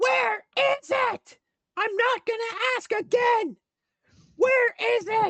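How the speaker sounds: yelling, shrill, very high and very loud. Narrating a voice heard from another room, Liara yelling. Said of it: "she's yelling".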